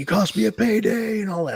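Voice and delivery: very high, furious, fired-up yelling. Retelling how a wrestler attacked his opponent: imitating someone yelling. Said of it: "he's yelling. He's like".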